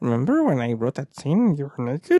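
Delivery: weird gnome voice, pitch swooping all over. Recalling last year's creepy panel, doing George R. R. Martin as a weird gnome. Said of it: "he sounds like a weird gnome".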